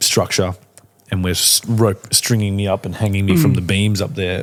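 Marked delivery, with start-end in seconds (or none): none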